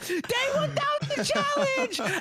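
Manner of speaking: put-on piercing, very high-pitched, shrieking scream. Retelling a dream where someone pokes his head in the door: imitating Madge screaming. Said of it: "he's screaming".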